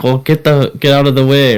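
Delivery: put-on Indian accent. Retelling a taxi driver's line from the story: imitating an Indian accent. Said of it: "however he does the accent".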